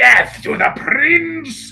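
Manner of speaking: very high, shrill, loud, drawn-out monster screech. Voicing the creature as it tears the prince apart: screeching, squelching creature voice. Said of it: "screeching and squelching".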